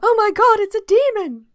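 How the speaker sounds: high, loud fake scream.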